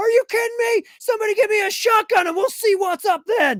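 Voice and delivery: acted, very high, shrill furious yelling. Retelling a clip heard in class: imitating Billy yelling angrily. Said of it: "my friend Billy's, uh, voice all of a sudden like".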